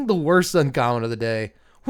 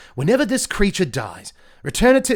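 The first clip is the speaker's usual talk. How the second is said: slight Australian accent, pitched up; 5 semitones higher than usual. Reading card text aloud, drifting into a slight Australian accent. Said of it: "Is that a little Australian?".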